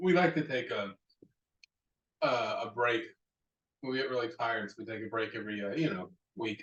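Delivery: dry, heavily ironic, fake-tired sarcastic tone. Joking about how rarely episodes get recorded: sarcastic tone. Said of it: "you can hear the sarcasm in our voice".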